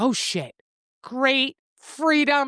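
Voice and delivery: thrilled, excited, each word savored and drawn out. Retelling a character's reaction to a gas card: imitating someone excited. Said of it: "She's all excited".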